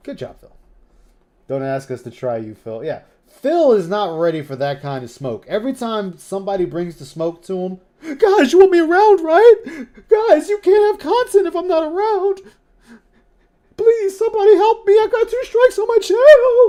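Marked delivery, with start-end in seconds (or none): 8.0-16.7 very high, very loud, sobbing, pleading cry. Mocking someone's pleas for help after two strikes: imitating Phil crying. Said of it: "That was you crying like a bitch about it".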